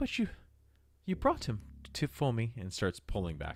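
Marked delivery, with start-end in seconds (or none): 0.0-2.5 put-on old granny voice, high and swooping. Voicing an old grandmotherly figure greeting the party: old grandmotherly character voice. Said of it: "She grabs on and she goes".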